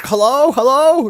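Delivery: shrill, high, booming, loud shout. Describing how he sounded on the call, imitating yelling on an old phone. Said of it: "yelling at me from the past on like a fucking 1920s phone".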